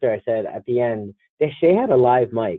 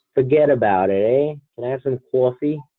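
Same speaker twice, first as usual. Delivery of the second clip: mock, exaggerated Jersey accent. Told they don't sound like they're from jersey, demonstrate a mock new jersey accent. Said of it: "that's what they want me to sound like".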